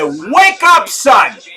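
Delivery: mock urgent, pretend loudest shout. Playing a boxer's corner trainer rousing his fighter: pretend loudest shout. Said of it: "in my loudest voice".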